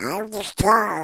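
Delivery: high-pitched little duck voice. Recalling his career, the speaker does the little duck's voice: Yakky Doodle voice. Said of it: "it is Webster's voice".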